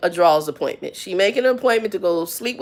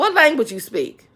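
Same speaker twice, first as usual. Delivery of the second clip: mock rude, dismissive, blunt tone, pitched high; 6 semitones higher than usual. Retelling how a coworker spoke rudely to a customer: imitating a coworker's rude question. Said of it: "This how she said".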